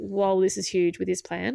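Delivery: ordinary talk, nothing marked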